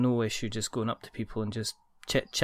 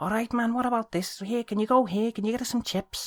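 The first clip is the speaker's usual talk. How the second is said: cheeky Liverpool lad voice, very high pitched; 12 semitones higher than usual. Imitating a friendly guy walking up to locals: imitating a cheeky Liverpool lad. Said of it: "Liverpool boy boy was just a cheeky".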